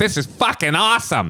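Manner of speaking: very high, put-on Boston dude accent. Acting out a Boston guy in bed: imitating a Boston guy. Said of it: "fucking Boston guy".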